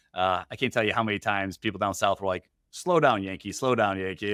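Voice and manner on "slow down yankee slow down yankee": normal talking voice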